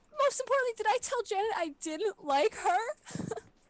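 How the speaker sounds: sobbing hysterically. Acting out a character draped over another character's lap, hysterical crying. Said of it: "Magpie is like hysterically crying".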